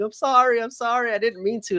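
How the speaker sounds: mock teary, high crying voice. Retelling a wrestler's apology to the crowd: imitating a wrestler crying. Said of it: "crying, like, to the crowd".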